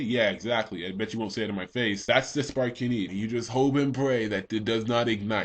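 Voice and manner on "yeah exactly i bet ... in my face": plain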